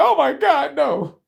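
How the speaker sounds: horrified, very high, very slow, creaky voice. Acting out the United States answering Russia: speaking as the United States dismayed. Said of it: "the motherfucking United States gonna be like".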